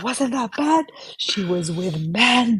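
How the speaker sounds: mock scandalized, high-pitched, stretched-out screaming exclamation. Retelling relatives' reply to the religious police: imitating someone screaming.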